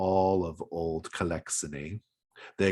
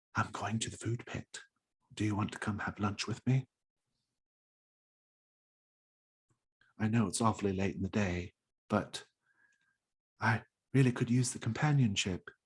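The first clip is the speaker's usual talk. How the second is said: hushed, secretive half-whisper; 2 semitones higher, 5 dB quieter than usual. Voicing a woman in a crowd inviting a player to lunch: half-whispering. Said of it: "she whispers in your ear".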